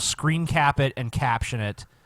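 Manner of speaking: plain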